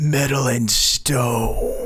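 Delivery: dark, menacing, ominous, doom-laden announcer tone. Introducing their Master of Orion series, a host says its name in an ominous voice. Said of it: "We have to say that in as ominous a voice as".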